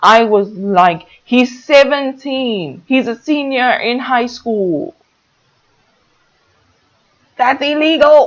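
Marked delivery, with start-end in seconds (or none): 1.2-8.3 put-on yelling, high-pitched screaming. Retelling reacting to a scene on tv: imitating screaming at the tv. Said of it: "I was literally screaming at my T V".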